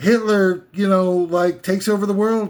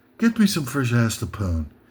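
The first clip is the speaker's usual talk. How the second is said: upper-class, ruling-elite-sounding voice; 8 semitones lower, 3 dB quieter than usual. Acting out the ruling elite demanding people: voicing the ruling elite. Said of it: "they come down from their giant ivory towers and they say".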